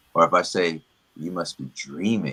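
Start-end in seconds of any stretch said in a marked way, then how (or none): 1.7-2.3 "dreaming" emphasized. Showing how stressing different words changes meaning, with stress on 'dreaming'. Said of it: "when I put emphasis on on each word".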